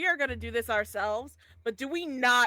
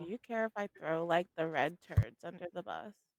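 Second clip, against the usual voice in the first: hushed half-whisper; 6 semitones lower, 7 dB quieter than usual. Playing a character who half-whispers to another character: in-character half-whisper. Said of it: "I'm gonna whisper to Versia".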